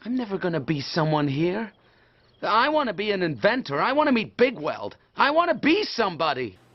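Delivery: clumsy, unconvincing put-on American accent. A film character speaks, in an awkward American accent. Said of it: "the most awkward American accent ever".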